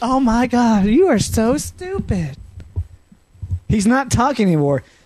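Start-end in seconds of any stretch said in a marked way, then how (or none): 0.0-2.4 put-on valley girl voice, very slow, drawn out. Clowning around with friends in a group conversation, doing a Valley girl voice. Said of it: "It was just a Valley girl".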